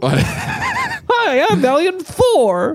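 very high, swooping, squeaky cartoon alien voice. Mocking a ventriloquist's puppet, doing its dumb Valiant Thor voice. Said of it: "he does a dumb voice too".

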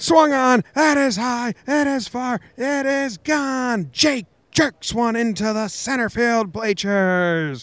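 very high, soaring sports-announcer call. After Jake gives his name, the speaker does a John Sterling home run call. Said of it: "try and John Sterling their names".

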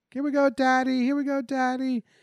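put-on small child screaming, very high-pitched little-girl scream. Retelling how his little daughter cheered on the radio broadcast: imitating a little girl screaming. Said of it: "just screaming, like".

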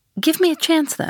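good-natured tone. The Englishman asks Ahab to let him go on, good-humored. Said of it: "said the Englishman, good-humoredly".

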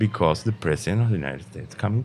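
plain

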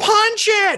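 very high, shrill yelling. Voicing a character urging a player in combat: Sylvia yelling. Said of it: "she yells".

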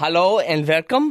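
put-on Dutch accent. Answering a greeting on the episode: put-on Dutch accent. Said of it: "but now I'm being Dutch".

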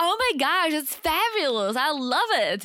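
put-on gushing enthusiasm, high and drawn-out. Showing how you act when your boss pitches an idea: fake gushing excitement. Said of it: "you just have to show how excited you are".

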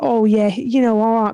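put-on charming, smooth-talking British accent. Telling about a guy who stopped three girls, imitating a british smooth talker. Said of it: "If you know any British guys, they got the chat".

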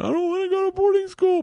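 mock tearful sobbing, very high-pitched. Retelling what Georgia said when she started crying, imitating Georgia crying. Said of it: "And Georgia starts crying, going".

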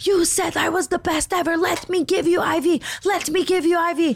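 high-pitched mock scream, not shrill. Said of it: "She's screaming at the top of her lungs".

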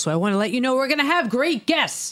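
hyped-up, high, swooping, everything-is-thrilling delivery. Promising great upcoming guests, imitating Kevin's exciting delivery. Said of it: "That's my best imitation of Kevin".

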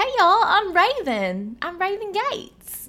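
cute, high, slow little Southern impression.

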